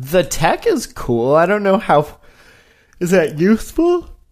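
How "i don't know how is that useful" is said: yawning through the words, pitch rising. After a long day at the office, a speaker comments on tech, yawning while talking. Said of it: "sorry, I'm yawning".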